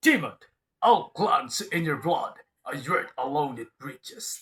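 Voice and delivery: very loud, booming game-character voice. Asked to imitate a game hero, doing an Alucard voice. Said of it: "Sige, gayahin mo".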